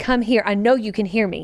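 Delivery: ordinary talk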